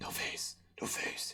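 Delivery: drawn-out, slow, over-dramatic passionate whisper. Retelling how a man kept repeating himself: retelling a passionate whisper. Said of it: "He started whispering like with like pa- like a passionate whisper".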